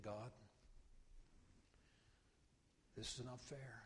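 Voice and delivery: acted weeping. Speaker recalling their own past words to God, retelling weeping.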